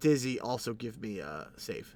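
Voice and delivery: ordinary talk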